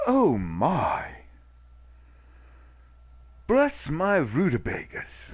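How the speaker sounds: really poor fake male British accent, high and swooping. Imagining how a teacher would react to a word: bad male British accent. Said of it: "that was my really bad male British accent".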